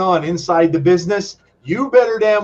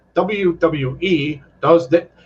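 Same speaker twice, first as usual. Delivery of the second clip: very slow, mechanical, machine-like robot voice. Recalling someone who recorded things in a robotic voice: robotic voice. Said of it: "recorded things in a robotic voice. So you'd get this thing talking like this".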